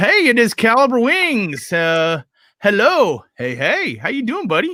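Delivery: high, swooping sing-song voice. Voicing the meowing cat greeting Caliber Wings: voicing Skittles the cat. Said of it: "So he's just kinda going".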